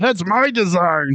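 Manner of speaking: pitched way up, puppet-style voice. Speaker quoting a character while retelling a story, in a Kermit the Frog voice. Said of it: "Why are you doing Muppet voices?".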